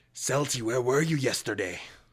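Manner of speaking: loud, hissing with sibilant hiss through every word. Narrating the scene, the speaker voices a woman who spots the player, hissing. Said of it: "she kind of hisses".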